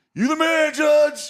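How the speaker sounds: yelling. Retelling yelling at a ballplayer from the bleachers: imitating own past yelling. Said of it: "And I'm yelling at Aaron Judge".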